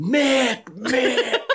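very high, screamed call. Retelling how their mom walked around the parking lot, retelling a scream. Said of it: "She's walking around the parking lot screaming".

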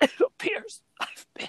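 put-on, breathy, dramatic dying whisper. Retelling the end of a sword-fight scene, imitating a dying man. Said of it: "He's saying it as he's dying".

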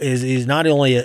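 ordinary talk

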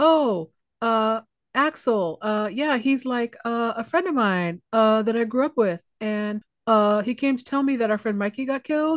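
mock-hesitant, put-on hesitant delivery. Mocking how a woman hesitates answering his questions, imitating a hesitant answer. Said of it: "She hesitates every time he asks her".

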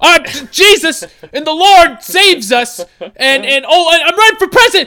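shrill, very high, loud screaming. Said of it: "Kanye West just started screaming".

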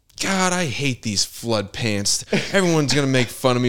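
high, fed-up, annoyed, pissed-off griping. Retelling a cartoon scene of a boy at the mirror: imitating someone pissed off. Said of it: "he's, like, all pissed off".

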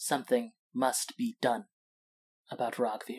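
very low, barely audible half-whisper. Narrating a scene, voice a character speaking without looking at another: very low half-whisper. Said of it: "in a very low whisper".

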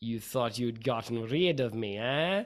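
put-on speech in a Russian accent. A narrator voices a familiar figure addressing the listeners, in a Russian accent. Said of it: "you hear a familiar Russian accent say".

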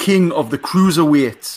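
put-on slow, loud Geordie accent.

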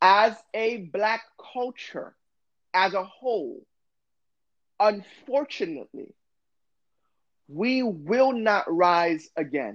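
very slow, deliberate, weighing every word. Speaker warning listeners not to jump ahead, saying it very slow. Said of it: "I'm going to say it very slow".

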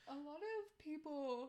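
talking mid-yawn. Chatting about holiday plans, the speaker trails off while yawning. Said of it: "Sorry, I'm yawning".

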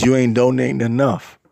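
ordinary talk

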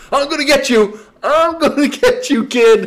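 all-out scream, very loud, high and drawn out. Retelling being yelled at from a passing car: imitating someone yelling. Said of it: "Skip's yelling at me".

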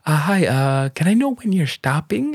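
very high-pitched, disarming, polite put-on voice. Retelling asking him when the drilling will stop, in a put-on high-pitched voice. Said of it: "i just did the high-pitched voice".

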